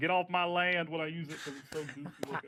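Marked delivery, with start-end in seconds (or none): 0.0-0.9 put-on rural country accent. Describing how they use a goofy-looking item, in a country accent. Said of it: "I do a country accent".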